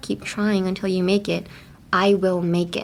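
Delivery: ordinary delivery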